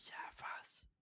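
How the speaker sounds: soft, unvoiced whisper.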